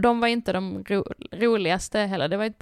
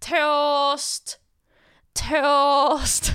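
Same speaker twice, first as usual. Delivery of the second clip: mock Skåne accent shout, "toast" stretched out; 6 semitones higher, 4 dB louder than usual. Retelling how they called out when a toast was ready: shouted, Skåne dinner-lady accent. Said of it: "Så bara skrek de ut".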